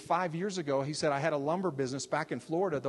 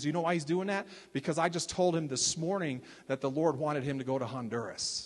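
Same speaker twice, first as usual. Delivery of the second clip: plain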